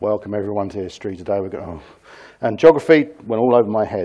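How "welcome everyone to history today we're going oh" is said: very quiet, low, flat, droning monotone. Recalling school, imitating their history teacher, in a monotone teacher voice. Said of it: "my history teacher was monotone".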